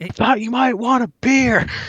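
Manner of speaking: very loud, high-pitched, shrill yell. Retelling offering a beer to a man with one good ear, retelling a loud shout. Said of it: "I shout as loudly as possible".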